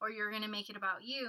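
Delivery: ordinary talk, nothing marked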